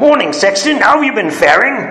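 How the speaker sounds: put-on Cockney voice. Speaker retelling how they would greet the church caretaker, fake Cockney accent. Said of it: "I would sometimes fake a Cockney accent".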